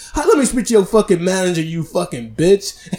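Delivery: acted wild furious cursing tirade. Retelling how their mom cussed out a lady, retelling a wild cussing-out. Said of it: "cussing her ass out like crazy".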